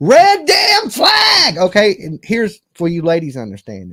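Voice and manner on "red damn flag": loud, very high shouting shriek. Calling out red flags to the viewers: screaming. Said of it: "Dolly's screaming".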